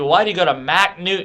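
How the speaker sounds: ordinary talk, nothing marked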